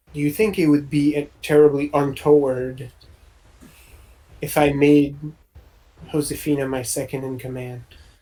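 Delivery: hushed, barely audible stage half-whisper. Voicing a character leaning in to ask quietly: hushed voice, barely audible. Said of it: "in a hush, like, you can barely hear him".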